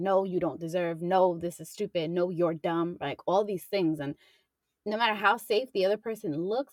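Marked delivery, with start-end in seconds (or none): none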